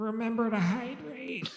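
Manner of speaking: very high, recorded-announcement style announcer voice. Voicing a pre-recorded message over the intercom: Croak intercom announcement. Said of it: "there's a pre-recorded voice of Croak that plays over the, uh, the intercom system".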